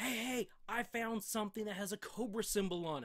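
play-acted, excited, eager, bursting voice. Retelling what she said on finding something at a garage sale: imitating her excited. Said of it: "she's like all excited".

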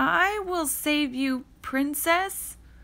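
tiny, small, high, slow little voice. The boy playing the prince speaks to the princess, in a little voice. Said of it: "Michael said in a little voice".

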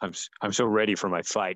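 put-on American accent, bland delivery. Mocking usual fighter platitudes for the camera, in an american accent. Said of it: "that's actually a really good American accent".

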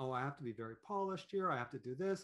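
plain

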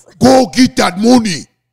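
booming, very loud, put-on Nigerian accent. Friends taking turns saying one phrase in different accents: Nigerian accent. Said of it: "That's more like Nigeria".

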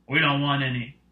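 rough, gruff-sounding voice. Narrator reads the reply from inside a room after a knock, in a gruff voice. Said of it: "A gruff voice announces".

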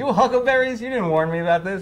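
very high, loud ranting tirade. Recalling how he complained of not being warned, imitating someone ranting. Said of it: "him ranting about the nuns".

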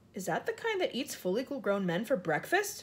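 ordinary delivery

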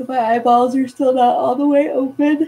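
talking through a yawn. Tired after sleeping through the alarm, explaining to the listener, yawning. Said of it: "Sorry for the yawn".

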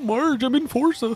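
very high-pitched, drawn-out cartoon voice. Imagining a cartoon character driving in the game: Homer Simpson voice. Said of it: "what if Homer Simpson was driving".

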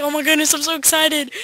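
ordinary talk, nothing marked

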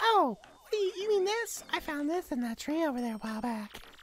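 put-on tangy female voice. Game streamer voicing Vivian's reply: Vivian voice, female with tang. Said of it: "I was trying to do like a female voice with some tang to it, but I can't do a female voice".

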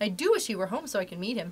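ordinary delivery

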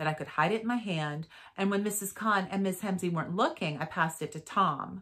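plain reading voice

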